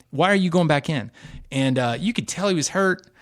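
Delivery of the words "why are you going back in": put-on scream, higher pitch. Retelling the backup screaming at him not to go back in: imitating someone screaming. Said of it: "The backup was screaming at him".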